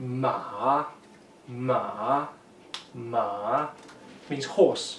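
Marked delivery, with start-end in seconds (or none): 0.0-3.7 dipping third tone, falling then rising, quieter. Teaching tones on the syllable ma, demonstrating the dipping third tone. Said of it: "Third tone".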